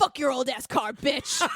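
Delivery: put-on super low, deep demon voice. Retelling a TV reenactment of the youngest boy attacking a car, super low demon voice. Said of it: "in a super low demon voice going".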